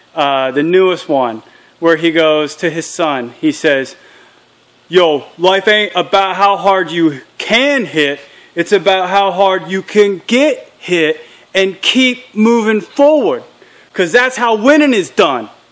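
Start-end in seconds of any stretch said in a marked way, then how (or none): 4.9-15.5 put-on Philly accent all the way through. Quoting a favorite line Rocky says to his son, as a Rocky impression with Philly accent. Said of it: "That's the best accent I got".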